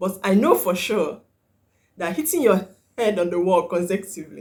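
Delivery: words broken up by laughter throughout. Talking about someone hitting her head on the wall, laughing while talking. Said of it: "sorry, I'm laughing".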